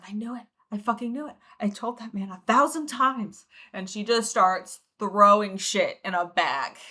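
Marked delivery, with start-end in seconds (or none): 0.1-3.4 frantic muttering under her breath. Narrator voices a woman muttering to herself before she starts packing a bag. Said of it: "starts muttering to herself under her breath".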